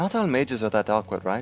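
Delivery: whispering in a character voice. Voicing a character leaning toward another to whisper: whispering in character. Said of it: "Thornton is gonna whisper towards Zafina".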